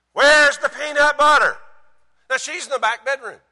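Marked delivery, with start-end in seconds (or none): 0.2-1.6 loud, high yell. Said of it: "And so I yell".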